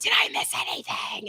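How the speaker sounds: hushed whisper under the breath. Coming back into a movie, asking the people around, whispering. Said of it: "and then I'm whispering".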